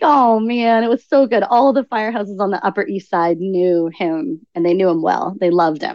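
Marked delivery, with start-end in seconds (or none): none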